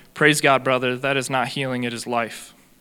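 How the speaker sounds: plain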